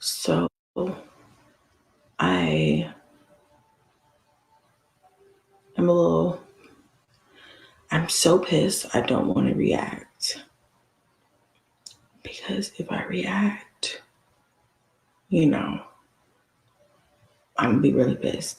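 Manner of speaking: speaking quietly in a hushed, low voice. Recording in the bathroom so as not to wake the kids, talking low. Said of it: "I'm kind of talking low".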